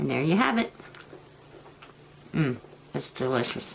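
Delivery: speaking with mouth full. Wrapping up a blue crab video for viewers, talking while eating. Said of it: "I apologize for my eating at the end".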